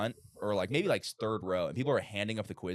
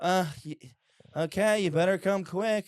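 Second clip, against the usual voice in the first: put-on reluctant teacher voice, higher and louder; 9 semitones higher, 6 dB louder than usual. Imitating a reluctant science teacher who always talked like this: imitating a reluctant teacher. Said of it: "she'd always talk like this".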